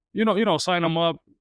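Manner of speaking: usual speaking voice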